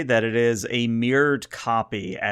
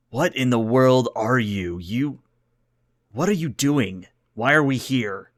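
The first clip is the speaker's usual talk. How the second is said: angry put-on alien voice. Voicing a pissed off Tellarite captain on the view screen: pissed off Tellarite captain. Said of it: "squints his eyes at you on the view screen and goes".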